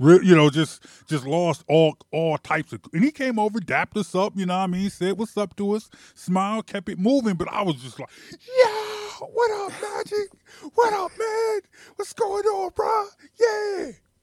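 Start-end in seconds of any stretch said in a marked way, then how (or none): 8.3-13.9 put-on loud yell, higher. Retelling spotting a basketball star at the Olympics: imitating own loud shout. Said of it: "Real loud".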